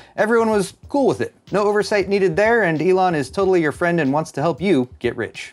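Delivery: heavily sarcastic, ironic, tongue-in-cheek, meaning the opposite. Speaker narrating over GTA 5 footage, sarcastic. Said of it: "Hopefully the sarcasm comes across here".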